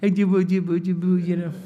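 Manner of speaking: put-on baby-talk voice. Showing how people talk to a baby: baby talk. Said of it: "You know how you talk to a baby?".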